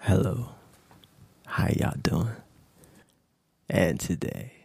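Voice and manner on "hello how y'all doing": exaggerated put-on sultry, seductive voice. Opening today's segment, greeting everyone in a put-on sexy voice. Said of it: "Let me pull out the sexy voice".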